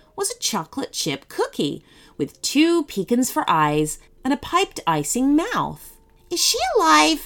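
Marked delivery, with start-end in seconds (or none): 6.3-7.3 high-pitched and full of hope. The gingerbread boy asks about a cookie on the table, hopeful. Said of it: "Asked the gingerbread boy hopefully".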